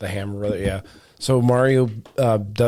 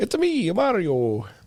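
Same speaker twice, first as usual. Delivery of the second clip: put-on Italian accent, much higher; 8 semitones higher than usual. Discussing the Super Mario Brothers movie, quoting its line in a Mario voice. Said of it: "you read that in the Italian voice".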